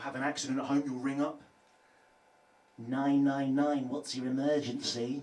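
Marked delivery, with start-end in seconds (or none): 2.8-5.2 flat, slow, machine-like robot voice. Imagining calling emergency services run by the voice assistant; Alexa robot voice. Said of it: "that's meant to be a robot voice".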